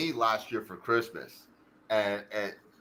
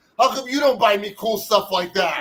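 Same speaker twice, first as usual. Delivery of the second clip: full-volume, very loud shout, pitched very high, shrill; 10 semitones higher, 9 dB louder than usual. Retelling a best friend on the phone yelling at his wife, retelling a friend's yell. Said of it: "yelling at his wife".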